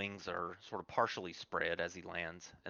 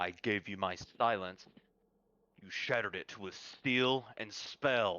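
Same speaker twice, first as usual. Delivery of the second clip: thunderous, rumbling dragon voice; 4 dB louder than usual. Game master voicing a dragon speaking to the players, in a thunderous dragon voice. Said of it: "a voice like thunder held in a dragon's throat".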